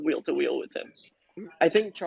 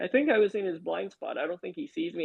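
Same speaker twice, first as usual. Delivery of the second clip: plain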